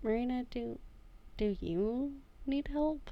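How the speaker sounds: very soft, quiet, slightly high-pitched voice. Voicing a character who quietly asks another character if she needs help: very quiet voice. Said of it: "he's just very quietly".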